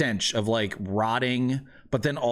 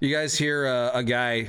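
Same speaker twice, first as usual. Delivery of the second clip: usual speaking voice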